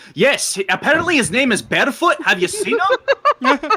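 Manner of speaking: put-on blaring Scottish accent, pitched very high. Narrator voices a character calling out while the group argues: very loud Scottish accent. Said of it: "a very loud Scottish accent going".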